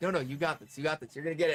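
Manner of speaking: soft put-on whispering voice. Retelling how Book whispered encouragement during a catch: imitating Book whispering. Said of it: "Book is, like, whispering".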